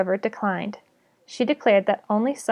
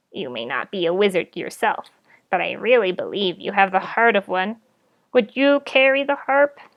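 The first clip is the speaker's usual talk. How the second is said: hoarse, rasping toad creature voice. A toad speaks to the great spider by Merlin's feet, raspy toad voice. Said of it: "the toad rasped".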